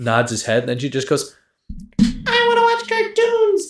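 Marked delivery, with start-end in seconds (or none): 2.0-3.7 put-on very high, wailing, drawn-out little-kid scream. Retelling a scene where a six-year-old daughter screams: imitating a child screaming. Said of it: "She starts screaming".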